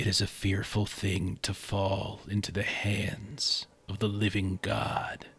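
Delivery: sudden, near-silent whisper. Game master voicing an unseen voice as a player grabs a photo: near-silent whisper. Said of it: "a near silent voice just suddenly whisper".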